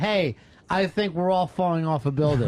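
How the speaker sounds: ordinary delivery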